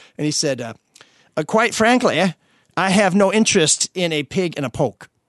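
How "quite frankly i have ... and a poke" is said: put-on, slow New Hampshire accent. Quoting a man's answer to a question: imitating a New Hampshire accent. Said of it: "you do a pretty good New Hampshire accent".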